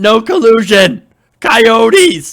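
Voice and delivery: loud, high-pitched mock yell.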